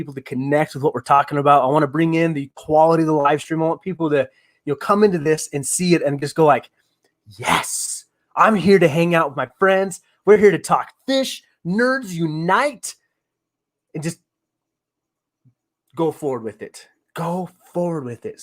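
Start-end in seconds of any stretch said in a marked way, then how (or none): 7.4-18.4 preacher-like sermon-style delivery, much slower. A streamer talks up the live stream to viewers: preacher-like delivery. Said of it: "I sound like a preacher now".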